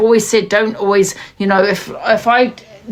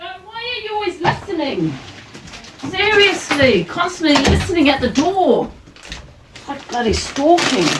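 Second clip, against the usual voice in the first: high, furious, fuming-mad rant; 7 semitones higher than usual. Complaining about someone listening at the door: furious. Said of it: "I'm bloody fuming".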